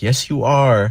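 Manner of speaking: indignant, insistent. Retelling how a woman got mad when he contradicted her, mock-mad insisting. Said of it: "And then she got all mad".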